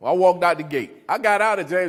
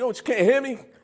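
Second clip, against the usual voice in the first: put-on high shouting, incredulous; 8 semitones higher than usual. Retelling a first phone call held upside down: retelling own yelling. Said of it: "So I'm yelling".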